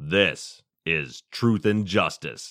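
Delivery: put-on radio voice. Deciding how to deliver a line, radio voice. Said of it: "The radio voice. ... Like that".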